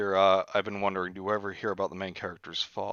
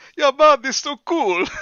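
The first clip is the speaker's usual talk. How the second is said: put-on Jamaican accent, higher pitch, louder; 10 dB louder than usual. Retelling his friend Josh chattering on the walkie-talkie, imitating Josh, Jamaican-sounding. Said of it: "he sounds more uh, Jamaican".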